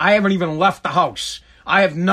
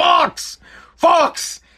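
put-on loud calling out, pitched very high; 9 semitones higher than usual. Retelling his father sticking his head out the window: retelling a loud shout.

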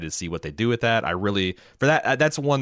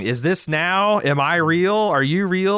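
mock screaming, very high and raised; 10 semitones higher, 5 dB louder than usual. Recalling a character's scene, imitating Dolores screaming.

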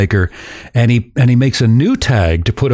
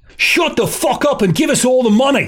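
put-on very high yell in Australian accent; 12 semitones higher than usual. Retelling how a partner storms into the bank, imitating Luke's Australian-accented yell. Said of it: "in his Australian accent".

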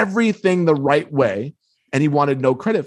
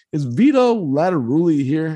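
mock timid, small, meek voice. Retelling asking an old guy at gate b for someone, imitating a meek voice. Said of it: "all meek sounding".

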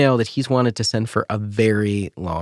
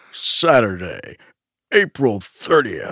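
put-on very old man's hyped monster truck announcer voice. Redoing a phrase that just came out sounding funny: old man doing Monster Truck voice. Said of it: "That's like a very old man doing Monster Truck voice".

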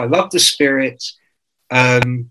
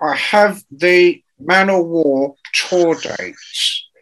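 very slow, deliberate newsreader-style presenter voice; 3 semitones higher than usual. Retelling how a rival music-channel presenter read out tour dates: imitating Dante Benuto's way of talking. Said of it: "he used to talk like this".

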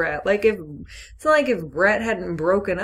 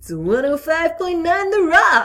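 put-on radio dj voice, much higher pitched; 10 semitones higher, 5 dB louder than usual. Talking about someone's radio voice, the speaker does Wells's radio DJ voice. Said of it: "Your radio voice is just mine".

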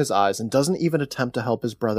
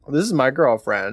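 ordinary talk

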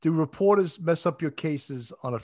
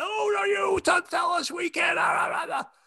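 very high, slow, sputtering screaming rant. Retelling how an inspector got on the phone: imitating someone screaming. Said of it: "gets on the phone screaming".

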